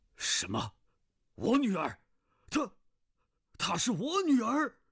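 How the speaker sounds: very high, startled, taken-aback cry with rising tune. Feng Tiannan, accused of scheming before the assembled fighters, reacts: startled. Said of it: "奉天南惊道".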